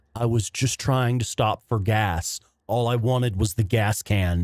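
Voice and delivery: normal talking voice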